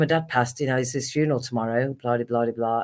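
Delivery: ordinary talk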